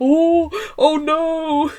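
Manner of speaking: put-on sudden fright, scared and fearful. Imitating the other wrestler's wide-eyed look: imitating a scared wrestler. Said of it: "the look of fear on the other wrestler's face".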